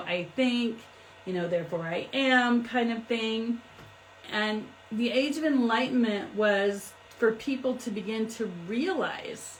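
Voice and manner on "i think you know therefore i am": normal talking voice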